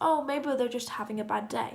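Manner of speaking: ordinary talk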